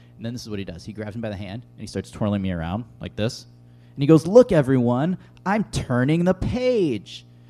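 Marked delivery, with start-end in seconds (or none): 4.3-7.2 mock, loud, very slow, drawn-out teasing tone. Retelling how a man twirled the speaker around, imitating someone mocking. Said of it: "making fun of me for being a page".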